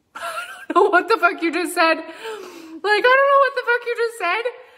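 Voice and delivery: laughing in disbelief.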